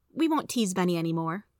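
plain

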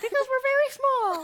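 tiny squeaky voice pitched very high. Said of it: "Why do the boys sound like Mickey Mouse?".

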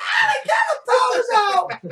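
put-on little-girl scream, very high, very slow, swooping. Retelling kids screaming when the power went out, retelling screaming like little girls. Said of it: "screaming like little girls".

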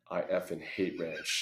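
close, confiding, hushed whisper. Retelling the boss's remark after landing while others were silent: imitating a whisper. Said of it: "just whispers in my ear".

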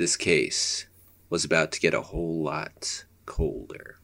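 gravelly, film noir narrator voice. Improvising a noir story told by Snoopy, as Snoopy as gravelly noir narrator. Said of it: "Gravelly noir voice".

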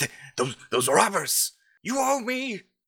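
very high, shrill accusing yell with stammered start. Voicing an old man who points at a floating man: yelling. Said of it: "He continues to point and yell".

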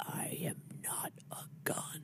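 intense, very slow, drawn-out whisper. Quoting a line from the movie: intense Iron Giant voice. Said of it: "a very intense".

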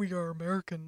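quiet, low eerie voice. Talking about a Lupita Nyong'o interview, doing the Lupita Nyong'o creepy voice. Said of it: "like that low creepiness".

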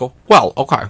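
catty, gossipy voice. Describing a talk show host mocking celebrities: Wendy Williams impression. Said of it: "She's like".

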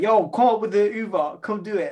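high, loud, frantic panicked shout. Retelling calling their brother after seeing a spider, retelling a scream-like call. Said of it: "I'm literally this scream".

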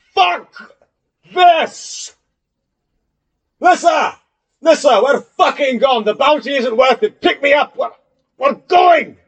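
very high, shrill, slow put-on shout. Voicing a poisoned character calling to his ally to flee: shouting in character. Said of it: "he shouts".

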